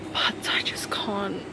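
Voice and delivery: soft, slow whisper.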